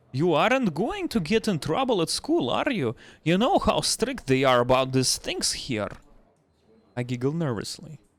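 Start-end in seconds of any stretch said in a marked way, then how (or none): 0.1-5.9 put-on Russian accent. Reading a bartender's lines aloud to a customer: Russian accent. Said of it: "let me memorize the Russian accent".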